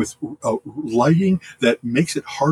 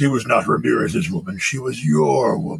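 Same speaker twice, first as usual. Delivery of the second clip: villain voice dropped low and rough; 4 semitones lower than usual. Recalling a movie villain's scenes and quoting him, in a Kurgan voice. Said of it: "I love doing the Kurgan voice".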